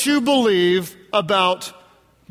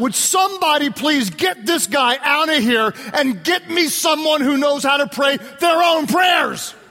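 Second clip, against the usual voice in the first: high-pitched, mock screaming outburst; 6 semitones higher than usual. Retelling how his mom screamed at the man praying: imitating his mom screaming. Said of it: "she screamed out".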